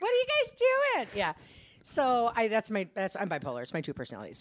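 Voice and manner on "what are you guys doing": high, chirpy, far-off, ditzy airhead voice. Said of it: "she's Pretty Anna".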